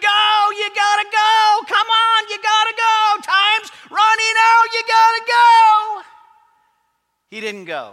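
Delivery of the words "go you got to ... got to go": drawn-out, loud, high scream. Recalling yelling at your son as the clock wound down; retelling own screaming. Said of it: "and I'm screaming".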